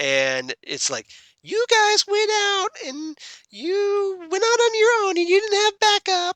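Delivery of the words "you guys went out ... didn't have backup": put-on scolding motherly voice, higher and louder. Retelling a TV scene where Felicity scolds: Felicity impression. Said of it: "That's a really good Felicity impression".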